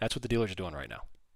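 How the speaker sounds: normal talking voice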